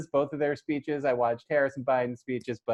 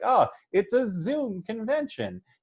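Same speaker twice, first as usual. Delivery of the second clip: high, slow joking tone. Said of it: "said in a sort of, like, joking tone".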